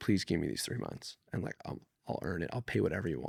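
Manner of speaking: soft, pleading, begging voice. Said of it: "I begged".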